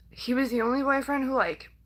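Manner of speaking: fighting back tears. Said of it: "I'm trying so hard, like, not to cry".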